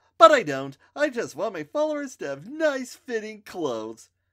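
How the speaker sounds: very high, very loud, sunny chipper chirp. [name] answers Mikey's worried question, in a chipper voice. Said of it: "adding in a chipper voice".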